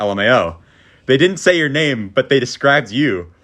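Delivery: ordinary delivery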